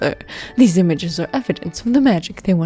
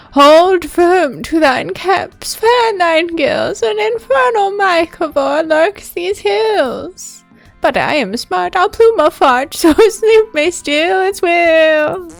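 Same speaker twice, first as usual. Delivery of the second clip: very high, shrill voice, will stretched out; 10 semitones higher, 4 dB louder than usual. Scolded by Peggy, the toadstool answers back in a shrill Mushy Mush voice. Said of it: "The toadstool responds with a shrill tone".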